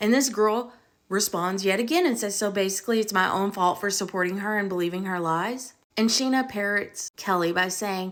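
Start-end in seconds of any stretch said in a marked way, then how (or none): none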